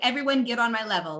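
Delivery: acted, excited, hyped-up rallying scream. Describing being the person in the back of a theater audience, reenacting screaming at a theater.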